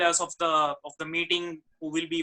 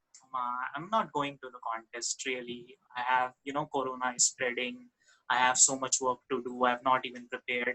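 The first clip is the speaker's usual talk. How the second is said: deep, low-key, very low dropped pitch; 5 semitones lower, 5 dB quieter than usual. Retelling own reply to uma about skipping the contest, in a very low tone. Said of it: "in a very low tone".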